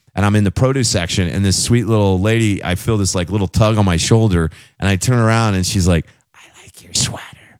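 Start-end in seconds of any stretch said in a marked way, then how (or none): 6.4-7.3 close, quiet, soft, hushed whisper. Retelling what a lady in the produce section said: imitating a whisper. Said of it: "Why are you whispering?".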